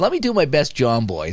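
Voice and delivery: ordinary talk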